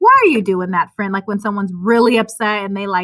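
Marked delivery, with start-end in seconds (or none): 0.0-1.1 put-on condescending tone. Retelling own words to angry drivers on the road: imitating own condescending tone. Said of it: "that's really just condescending of me".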